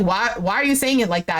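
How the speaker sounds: normal talking voice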